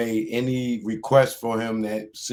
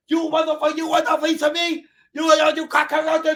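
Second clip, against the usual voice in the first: put-on movie gangster voice, higher; 4 dB louder than usual. Acting out the movie's end scene, daring someone: Tony Montana voice. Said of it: "Tony Montana style".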